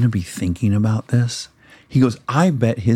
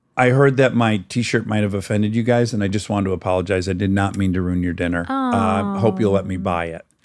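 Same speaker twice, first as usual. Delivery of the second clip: ordinary talk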